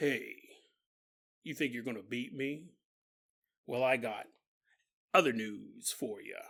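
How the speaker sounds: very low-pitched and soft.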